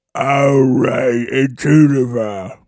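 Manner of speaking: orc monster voice. Signing off their Tolkien podcast, a host says it in an orc voice. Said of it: "My best orc voice".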